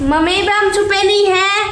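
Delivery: teasing voice.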